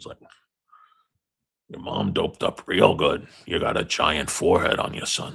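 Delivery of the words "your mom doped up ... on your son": badly done creaky, raspy put-on character voice. Quoting the florist in The Town with Ben Affleck: bad impression of the florist from The Town. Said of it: "it's not a very good Forrest impression".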